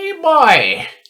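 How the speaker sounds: very high-pitched put-on skeleton voice. Asked for a sample skeleton voice to copy, offering one: skeleton voice. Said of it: "give me a sample for a skeleton voice".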